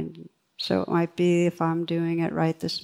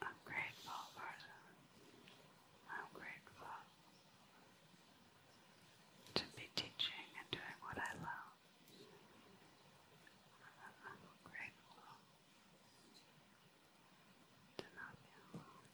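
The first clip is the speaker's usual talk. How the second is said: whispering a little louder. Leading a gratitude practice, showing the phrase: whispering a little louder. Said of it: "Whispering it a little louder now".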